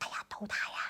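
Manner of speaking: soft, unvoiced whisper with no voice.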